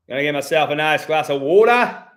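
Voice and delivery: put-on Australian accent, loud. Speaker retrying an accent after calling the first try terrible, Australian accent. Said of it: "Let me try to do Australian again".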